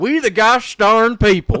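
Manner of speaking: very loud, high Georgia southern bayou accent. Speaker previews reading the Declaration next episode; southern Georgia bayou voice. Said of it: "like southern like Georgia Bayou kind of voice".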